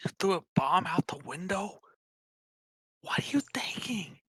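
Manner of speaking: under-the-breath voice. Speaking in character to a companion during the game: hushed tone. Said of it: "I say in a hushed tone".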